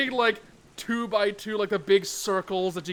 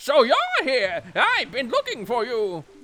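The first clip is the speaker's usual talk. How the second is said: high, swooping, grating squawky bird voice; 5 semitones higher, 3 dB louder than usual. Reading a postman character's lines in a game: squawky bird voice. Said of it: "let me get back into character".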